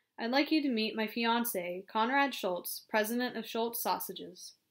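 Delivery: ordinary delivery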